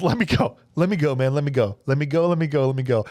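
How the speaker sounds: put-on calm voice. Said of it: "Ramon Cota seems real calm".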